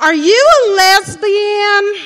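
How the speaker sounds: very high, very loud put-on Southern accent. Retelling the roommate's question to the speaker in her best Southern voice. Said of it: "said in her best Southern voice".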